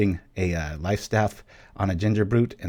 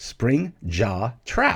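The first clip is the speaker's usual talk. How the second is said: very slow, deliberate delivery, higher pitch; 3 semitones higher than usual. Naming a card that is hard to say, the speaker says it very slowly. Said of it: "I have to say it very slowly".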